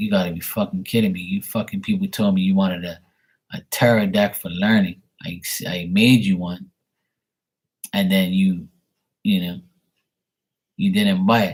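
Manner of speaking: ordinary talk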